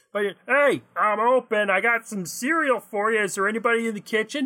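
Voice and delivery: tiny, high-pitched robotic man's voice. Describing a little robot man popping out of a cuckoo clock, little robot man voice. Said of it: "Am I just gonna keep doing this voice?".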